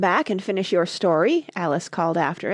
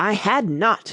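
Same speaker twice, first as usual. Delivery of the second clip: sharp, snapping, very angry. The Mouse answers Alice sharply and very angrily. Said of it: "sharply and very angrily".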